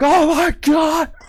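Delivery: shrieking, terrified panic scream, pitched very high. Describing how they would have fled a missile strike in the game: pretend screaming. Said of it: "run screaming, like".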